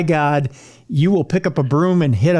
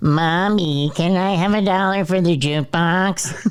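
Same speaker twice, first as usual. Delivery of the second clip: slow, drawn-out put-on character voice. Voicing a child asking for jukebox money, in Boo-Boo voice. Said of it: "In my best boo-, boo-boo voice".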